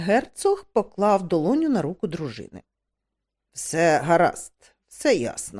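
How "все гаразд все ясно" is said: icy, cold, low, slow and deliberate tone. A duke answers the chamberlain's halting report about unpaid bills, coldly. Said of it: "холодно сказав він".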